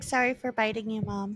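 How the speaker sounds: put-on cat voice. Speaking for the cat after it gave little kisses: voicing the cat. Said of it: "He's like".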